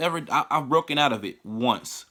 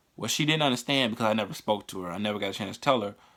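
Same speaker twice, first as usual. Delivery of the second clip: ordinary talk, nothing marked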